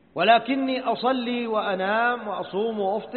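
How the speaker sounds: plain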